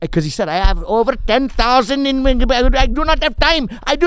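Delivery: put-on Indian accent. Retelling what a pissed-off man said to him: imitating an Indian accent. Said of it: "he happened to have an Indian accent".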